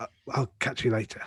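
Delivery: hushed, soft whispered voice. Saying goodbye in character to another player's character, whispering in character. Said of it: "I'm actually not sure why we're whispering".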